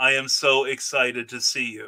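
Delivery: total flat, slow deadpan with no emotion. Describing having a very unemotional voice: total deadpan delivery. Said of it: "the total deadpan delivery".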